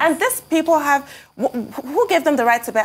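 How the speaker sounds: high, angry stammering, tripping over words. Talking about someone being shot, the speaker asks with an angry stammer. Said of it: "I'm stammering. I stammer when I'm angry".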